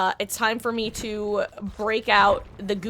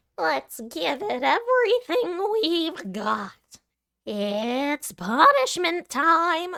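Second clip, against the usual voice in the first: high, swooping, drawn-out drunken cartoon bear voice; 7 semitones higher than usual. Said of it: "I swear I sound like drunk Uncle Monokuma".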